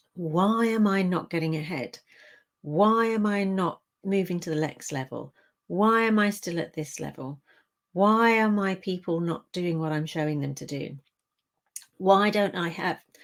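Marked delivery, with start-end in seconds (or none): none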